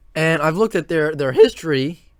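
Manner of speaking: voice cracking. Speaker introducing videos on the new Big 12 teams, with a voice crack. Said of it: "Excuse me for the the weird voice crack".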